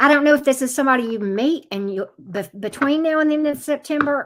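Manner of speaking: high, rushed words tumbling out far too fast. Doing a card reading for a viewer, talking too fast. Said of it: "I'm talking too fast".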